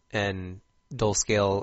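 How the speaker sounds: plain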